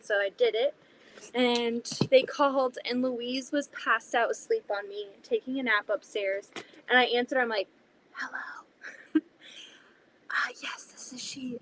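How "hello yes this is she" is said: slow, careful, hushed whisper. Recounting answering a phone call while the baby napped, the speaker retells a whispered answer. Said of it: "but you were whispering".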